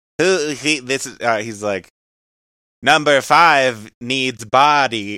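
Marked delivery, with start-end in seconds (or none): 2.8-5.2 put-on robot voice. Two people recount a film scene; one is asked to do the voice: Johnny Five voice. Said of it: "do the voice".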